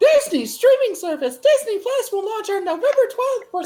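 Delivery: very high, squeaky, silly cartoon voice. Taking a turn reading a news item aloud, the speaker uses a funny voice. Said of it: "should I do it in a funny voice?".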